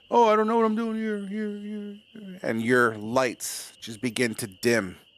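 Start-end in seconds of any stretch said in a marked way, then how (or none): 0.1-2.4 high, trailing, repeating echo, fading. Voicing a character's words as another character passes out: voice fading into an echo. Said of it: "it slowly kinda goes to echo".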